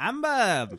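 put-on high Italian accent. Talking about Survivor players, saying Amber with Italian accent as Boston Rob. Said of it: "I always do an Italian accent for Rob".

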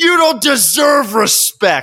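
shrill, very high-pitched yell. Retelling how the son's girlfriend yelled back at his father: retelling a yell. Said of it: "she yells".

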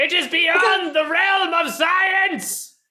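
very high, deliberate, drawn-out shout. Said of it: "because you yelled it".

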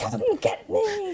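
mock defiant, very high, drawn-out scream. Retelling how a skeptic provoked a ghost: imitating someone screaming. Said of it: "he would scream at the ghost".

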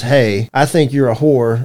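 mock robot-like speech. Retelling what a young girl said to her, imitating robotic talk. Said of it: "talks like a robot".

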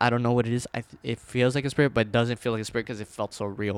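ordinary talk

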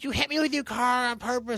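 put-on high-pitched, accusing girl's screaming. Retelling a girl who ran up and swung the car door open, retelling her screaming. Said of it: "starts screaming at me".

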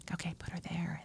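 whispering. Retelling how the other speaker guided the baby to the breast: imitating someone whispering. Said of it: "You were whispering".

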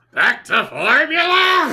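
very high, loud, shrill, swooping belted voice. Repeating a strange phrase from a plot summary, exclaiming: Gilbert Gottfried voice. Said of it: "You sound like Gilbert Gottfried".

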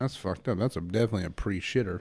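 plain

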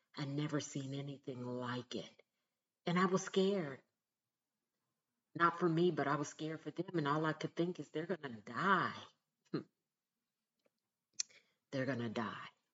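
tearful voice, near crying. Remembering people trying to stay warm on the sidewalk: close to tears. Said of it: "I'm almost about to cry now".

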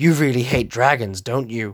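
bone-dry, flat deadpan delivery. Retelling a movie line, imitating the character dryly: dry deadpan Seto Kaiba voice. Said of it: "just so dry in his voice, so dryly just goes".

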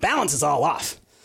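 mumbled, aimed at no one. Narrator voices the engineer staring down at the train controls; muttering. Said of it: "you hear him mutter".

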